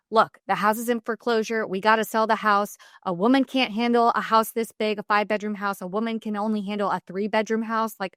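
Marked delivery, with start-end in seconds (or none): none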